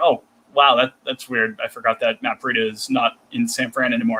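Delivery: normal talking voice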